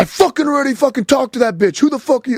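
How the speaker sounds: raging, furious outburst, pitched very high. Retelling what the guy blocking them in said: imitating someone going off. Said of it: "went off on me".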